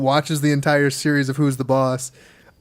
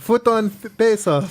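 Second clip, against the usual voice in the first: put-on Filipino accent, higher pitch; 7 semitones higher than usual. Imitating a friend's mom suggesting a movie: put-on Filipino accent. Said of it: "My mom doesn't speak with a Filipino accent".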